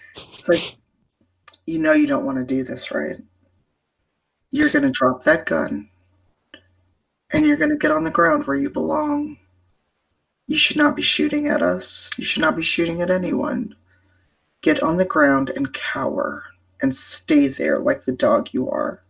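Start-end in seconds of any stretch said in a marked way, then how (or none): 2.0-18.9 soft ASMR voice, very close to the ear. Grabbing a gunman by the collar, speaking right in his ear, ASMR voice. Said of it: "kind of that A S M R voice right in his ear".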